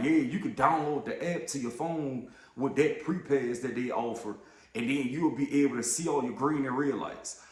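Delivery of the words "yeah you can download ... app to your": usual speaking voice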